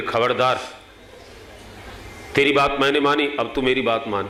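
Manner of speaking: normal talking voice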